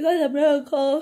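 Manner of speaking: words said mid-yawn, very high and very loud. Telling viewers about the day off, yawning while talking. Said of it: "Excuse me, I'm yawning".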